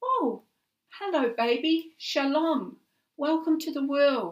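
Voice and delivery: loud, high calling-out voice. Narrating a story, Abby greets her newborn nephew at the bedside, calling out. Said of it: "Abby called out".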